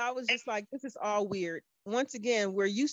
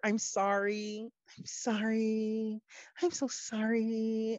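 put-on condescending, smug, much slower. Retelling how a woman apologized, mocking a condescending apology. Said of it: "it was so condescending".

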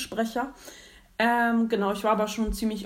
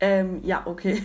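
normal talking voice

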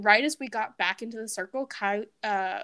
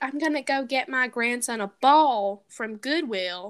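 put-on Southern accent. Recalling their old pretend game, doing Betty's Southern accent. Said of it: "we used to have Southern accents and just talk like Southern people do".

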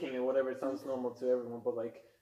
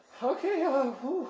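breathless, flustered gasp, very high; 13 semitones higher, 7 dB louder than usual. Voicing a character who gasps before speaking: gasping, flustered. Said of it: "sort of gasps".

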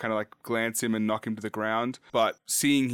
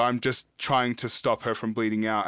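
plain

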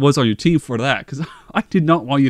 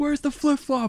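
put-on yell, higher pitched; 12 semitones higher, 8 dB quieter than usual. Retelling what the team yelled during a game: imitating yelling. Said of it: "we're just yelling".

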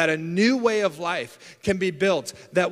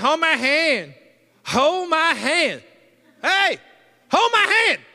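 mock toddler yell, very high, sing-song, drawn-out; 9 semitones higher, 4 dB louder than usual. Retelling how a two-year-old daughter asks during prayer: imitating a toddler yelling. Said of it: "she starts yelling at us like".

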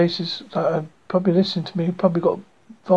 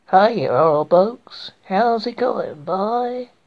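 bad, slow, fake American accent; 3 semitones higher than usual. Speaker shows a really poor attempt at an American accent. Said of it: "This is my really poor attempt at American accent".

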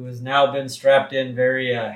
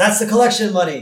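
startled exclamation, higher and louder. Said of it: "he says".

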